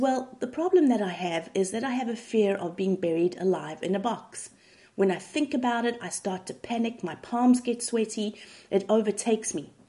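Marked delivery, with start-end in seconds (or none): none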